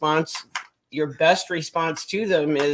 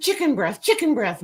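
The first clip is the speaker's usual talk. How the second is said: mock yelling, much higher pitch; 8 semitones higher than usual. Retelling how a man kept yelling outside the er, imitating a man yelling. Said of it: "the guy's yelling".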